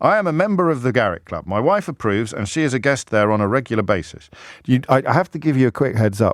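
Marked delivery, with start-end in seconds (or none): none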